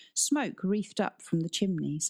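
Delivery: ordinary delivery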